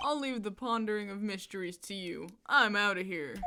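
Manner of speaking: beach surfer dude voice. A game character takes his leave of the group, in a surfer guy voice. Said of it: "I've given him the surfer guy voice".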